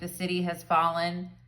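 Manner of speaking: normal talking voice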